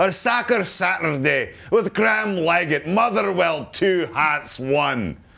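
high-pitched, bad Scottish accent. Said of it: "Great Scottish accent".

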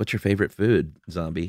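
ordinary talk, nothing marked

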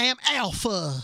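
put-on high-pitched, loud Southern accent. Talking about a scene, a speaker replicates Alpha's line, imitating Alpha's accent. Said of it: "just trying to replicate".

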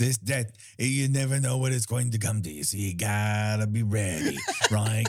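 put-on hard-boiled, old-time gangster voiceover. Mimicking a voiceover they are discussing, the speaker uses a gangster voiceover voice. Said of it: "sort of like a gangster voiceover".

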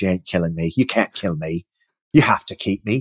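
low, insistent put-on Irish accent. Retelling what a cast member told Milch, imitating her Irish accent. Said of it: "in her beautiful Irish accent".

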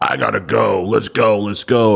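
slow, drawn-out, insistent delivery. Retelling a night out, imitating an impatient friend: imitating a friend in a hurry. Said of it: "Raul's typical Raul self".

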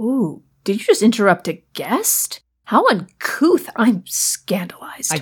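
sarcastic, slow, dripping, feigned scandalized shock. Teasing another speaker for interrupting a guest: sarcastic. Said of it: "I don't appreciate the sarcasm".

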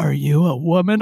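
put-on on-air radio announcer delivery. Retelling a shout-out where Bob Rice used his radio voice, imitating Bob Rice's radio voice. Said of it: "let me use my radio voice".

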